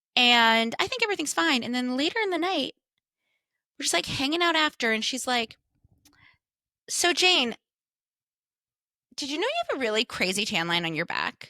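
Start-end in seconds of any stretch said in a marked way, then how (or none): 6.9-11.3 mean, snide, nasty sing-song tone. Retelling what a friend said after a birthday dinner: imitating a mean remark. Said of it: "the meanest way ever".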